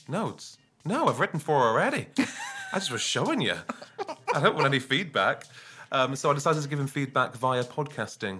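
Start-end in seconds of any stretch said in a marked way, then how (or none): 0.1-5.4 put-on terrible, sing-song Northern Irish accent. Speaker quotes a man's reply to an offer of notes, in a terrible Northern Irish accent. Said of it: "that terrible accent that I just did".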